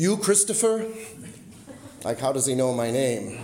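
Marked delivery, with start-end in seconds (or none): 0.0-0.9 put-on, very heavy Spanish accent, pitched up. Retelling what a man at the car window said, imitating his very heavy accent. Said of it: "he says in a very heavy accent".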